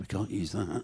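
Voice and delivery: hushed stage whisper under the breath. Recounting a commercial shoot, retelling a half-whisper under the breath. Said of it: "whispering under his breath".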